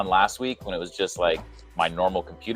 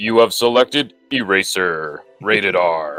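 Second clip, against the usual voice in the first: put-on phone announcer voice; 4 dB louder than usual. Recalling Seinfeld, a speaker does the Moviefone guy voice. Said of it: "I'll do the movie phone guy".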